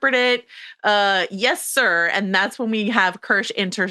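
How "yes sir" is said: cheeky, sarcastic, dripping with sass. Retelling a character's reply to an order: imitating a sarcastic reply. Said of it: "sarcastically, sassily".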